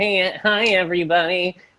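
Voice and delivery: mocking put-on stand-up voice. Mocking a comic's stage opening: imitating Dave on stage. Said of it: "you get on stage, right, and you go".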